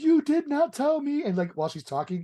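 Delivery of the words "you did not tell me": mock very high, slow, tearful blubbering. Retelling a cohost's mom hearing about the marriage: imitating someone blubbering. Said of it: "she starts fucking blubbering like a fucking whale".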